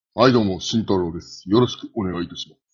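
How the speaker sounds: deliberately low, faked angry-sounding voice. Introducing yourself after the first speaker's greeting, in a low voice. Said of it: "何ちょっと低い声使ってんだよ".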